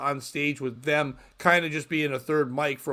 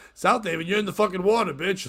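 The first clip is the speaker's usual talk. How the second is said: put-on old man voice, mildly scolding and yelling; 5 semitones higher than usual. Retelling an old joke from growing up about South Haven: imitating an old man yelling. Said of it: "why are you yelling at me, old man?".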